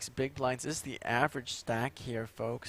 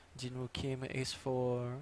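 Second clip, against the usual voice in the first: slow, put-on stock French accent. Calling a poker hand as a joke: generic French accent. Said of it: "That's just a generic French accent".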